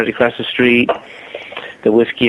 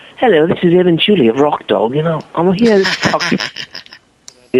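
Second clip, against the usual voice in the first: put-on English accent spoken at a higher pitch; 6 semitones higher than usual. Recreating an advertising spot he voiced in his own studio, in an english accent. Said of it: "I used the English accent for Evan Chuley".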